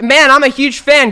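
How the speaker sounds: obnoxiously loud, high, sarcastic gushing. Retelling how a guy greeted them on a couch: imitating a sarcastic, obnoxiously loud fan. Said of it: "really sarcastically and obnoxiously loud".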